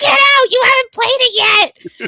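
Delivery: very high, shrill screaming outburst. Retelling the moment a husband came home: imitating a scream. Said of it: "so I was screaming at him".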